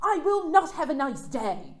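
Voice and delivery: put-on loud, snooty, lofty, haughty British accent. Retelling a woman's reply to a cell phone store clerk, in a haughty british accent. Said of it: "in her haughtiest British accent".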